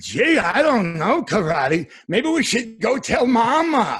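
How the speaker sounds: very high, dopey voice with "mama" stretched out. Voice actor showing the voice he gave a cartoon cat, in the Boom Boom Burmese voice. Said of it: "So I gave him the voice that sounded like this".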